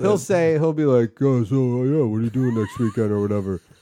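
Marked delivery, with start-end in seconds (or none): 1.2-3.6 casual, chatty fatherly dad voice. Retelling a phone call, imitating his dad. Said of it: "your impression of him".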